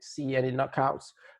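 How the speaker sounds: ordinary delivery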